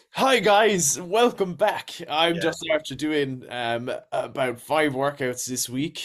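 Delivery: lively, perked-up influencer voice. Acting out talking on Instagram stories: animated Instagram story voice. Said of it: "you do have to animate your voice a little bit and be like".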